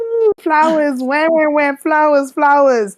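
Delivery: slow, high mocking tune.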